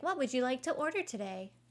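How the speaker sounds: put-on robotic automated assistant voice. Retelling a Taco Bell visit, imitating a drive-thru AI voice. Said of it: "The drive-thru had an A I voice".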